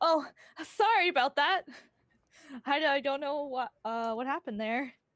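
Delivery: nervous, a little shaken. Describing a planned scene, acting out someone who realizes she's crying, nervous and shaken. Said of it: "Just kind of nervously, like kind of little shaken up".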